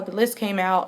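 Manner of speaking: ordinary delivery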